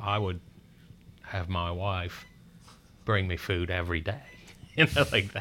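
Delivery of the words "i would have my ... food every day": put-on Australian accent, best attempt. Quoting a doctor from Australia about hospital food: Dr. Zito's Australian accent. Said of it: "It's my best Australian accent that I can do right now".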